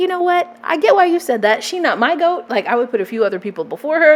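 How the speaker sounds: plain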